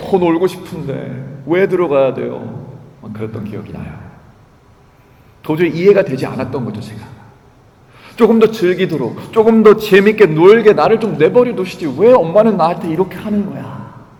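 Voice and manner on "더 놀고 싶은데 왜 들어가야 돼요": slow put-on whining child voice, close to tears. Recalling what they said to their mother as a child: imitating a whimpering child. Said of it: "늘 울먹이면서 입술 이렇게 쭉 삐져나와가지고".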